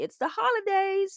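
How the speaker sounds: best-effort put-on American accent, very high pitch. Talking about holiday foods, in a best-attempt American accent. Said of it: "that was my best American accent".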